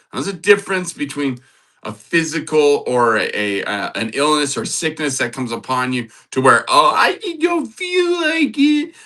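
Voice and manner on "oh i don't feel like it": very high, drawn-out sing-song whiny voice. Speaker on self-discipline mimics someone who doesn't feel like it, imitating a whiny voice. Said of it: "Kind of sounds whiny".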